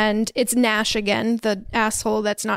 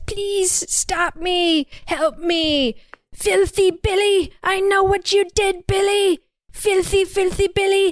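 very high, squealing piglet voice; 9 semitones higher than usual. Recapping a story, the speaker voices the caller on Jess's phone, sounding like a baby pig. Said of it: "he sounds like a baby pig and says".

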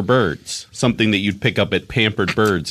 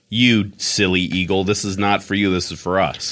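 usual speaking voice

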